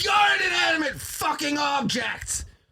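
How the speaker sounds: mock, high-pitched, yelled outburst. Explaining a scene where a man answers his wife, retelling a man's yell. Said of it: "but you yelled".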